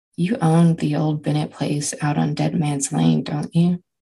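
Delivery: ordinary delivery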